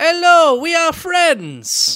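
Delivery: put-on very high voice, slow, every word stretched. Teasing a friend about his interview persona: Borat voice. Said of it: "you turned into Borat for your interviews".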